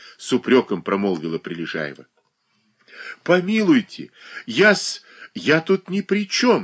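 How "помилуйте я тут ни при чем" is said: faltering, halting, breaking voice, much higher. A man answers Prilezhaeva's reproach: faltering voice. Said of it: "заговорил он прерывающимся голосом".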